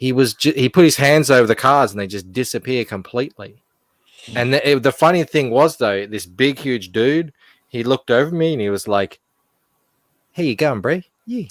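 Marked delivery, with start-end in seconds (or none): 10.3-11.5 really high, pitched-up voice, surprisingly high. Retelling how a huge guy greeted the speaker, imitating a really high voice. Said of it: "he had this really high voice".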